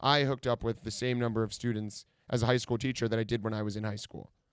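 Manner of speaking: ordinary talk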